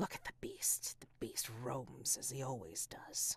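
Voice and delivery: dry, willowy, hushed, swooping, gossipy tree voice. Voicing the trees as they watch the humans: dry, gossipy tree voices. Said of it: "I think you start to hear their voices. You start to hear their way of talking, dry and dry, but possibly also flexible and willowy and just gossipy even, ... dry and dry, but possibly also flexible and willowy and just gossipy even".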